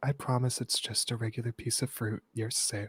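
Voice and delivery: soft whisper, close to the ear. Voicing a character who whispers in someone's ear: whispering. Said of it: "She just whispers in your ears".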